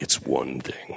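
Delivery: very low, menacing put-on voice. Describing how a guy says something, in a Darth Vader voice. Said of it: "like with the Darth Vader voice".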